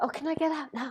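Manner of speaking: timid, small, high-pitched British voice. Retelling asking to leave a hot sweat lodge: imitating her own little british voice. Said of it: "me and my little British voice saying".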